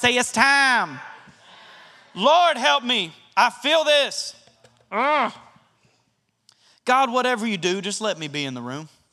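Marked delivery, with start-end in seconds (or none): 0.2-1.0 Southern accent, drawled and stretched out. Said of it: "with a Southern accent like I did".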